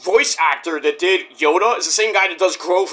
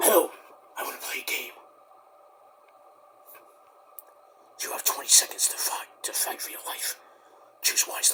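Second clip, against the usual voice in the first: creepy, hushed, soft whisper; 4 semitones lower, 12 dB quieter than usual. Talking about the Saw movies and doing the killer: creepy Jigsaw whisper. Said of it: "Why are you whispering?".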